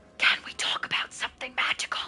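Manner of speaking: conspiratorial, secretive, hushed whisper. Rereading a game line as if it were about illegal things: secretive. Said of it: "we're talking about illegal things".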